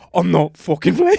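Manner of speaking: put-on Irish accent. Retelling how a man he grabbed from behind on a mountain answered: thick irish accent. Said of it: "In the thickest Irish accent".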